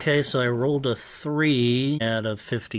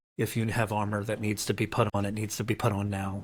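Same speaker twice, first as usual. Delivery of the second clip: hushed, lowered voice, quieter; 3 semitones lower, 6 dB quieter than usual. A player turns to the group before a door, speaking in a lowered voice. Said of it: "in a lowered voice".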